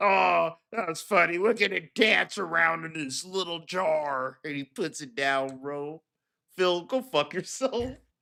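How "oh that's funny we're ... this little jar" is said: different voice, "jar" drawn out. Retelling how PPP shakes a jar, imitating PPP. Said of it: "Fucking shakes it and goes".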